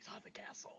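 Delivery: very quiet, hushed whispered aside. A character answering a question about a banished companion, whispering. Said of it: "I'm just gonna whisper".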